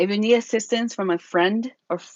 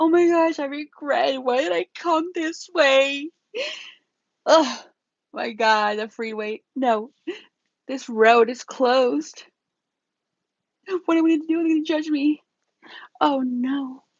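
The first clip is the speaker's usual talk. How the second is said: theatrical, pitched-up, overdone, over-dramatic panicky fretting; 6 semitones higher than usual. Advising listeners to stay calm when lost driving, acting out the wrong way, mock-dramatic. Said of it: "I'm being a little dramatic".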